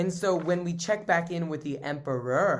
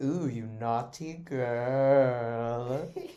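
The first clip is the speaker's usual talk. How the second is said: seductive purr. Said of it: "he was like".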